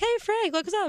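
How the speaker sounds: high, excited, starstruck squeal.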